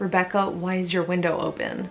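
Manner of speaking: plain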